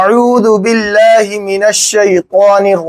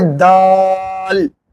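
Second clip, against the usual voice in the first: the word "daal" stretched out long. Pronunciation lesson on the letter dal: drawn-out daal. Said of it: "इसको थोड़ा खींच कर कहेंगे, ऐसा कहेंगे".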